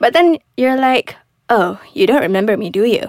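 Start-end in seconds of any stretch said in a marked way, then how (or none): 1.5-3.1 mock sarcastic, passive-aggressive delivery. Acting out a woman greeting a man who forgot her: acting out a sarcastic passive-aggressive line. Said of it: "Being sarcastic, sort of a aggressive".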